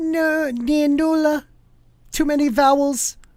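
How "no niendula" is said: much higher pitched voice. Reading aloud and retrying a hard name's pronunciation, in a high voice. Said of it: "I go high voice".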